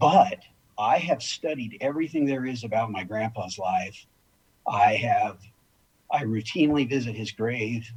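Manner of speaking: heartfelt, moved, with emotion rising throughout. Speaker talks about the grandfather he was named after, getting emotional. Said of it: "I'm getting emotional as I speak".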